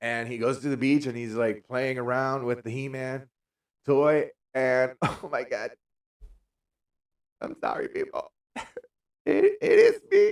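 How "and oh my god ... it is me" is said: very high, loud, tearful crying wail. Admitting an embarrassing beach story is about oneself: crying. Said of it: "because I am crying now".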